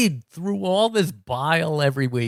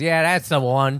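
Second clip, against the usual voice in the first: put-on Australian accent. Retelling a man's reply about his daughter, imitating an australian accent. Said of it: "my great Australian accent".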